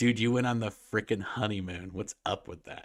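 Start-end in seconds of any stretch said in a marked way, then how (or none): none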